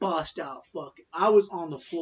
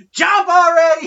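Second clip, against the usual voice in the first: put-on very high, very loud drunken hollering; 12 semitones higher, 15 dB louder than usual. Retelling how a drunk man walking out of the Roxy yelled at the crowd: imitating a drunk man yelling. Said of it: "He fucking yells at the top of his lungs".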